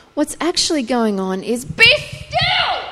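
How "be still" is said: very high, forceful, authoritative voice. Showing how the hebrew line sounds: forceful authoritative command. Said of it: "It's actually this incredible command".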